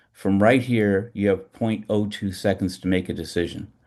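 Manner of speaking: ordinary talk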